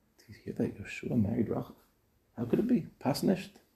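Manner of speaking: quiet whispering. Acting out people gossiping in the park: imitating gossipy whispering. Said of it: "I'm sure they were all whispering".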